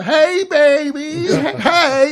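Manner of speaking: put-on very high, loud drunk holler with drawn-out hey. Retelling a drunk guy yelling out the window: imitating a drunk guy yelling. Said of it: "he's drunk and he's fucking yelling out the window".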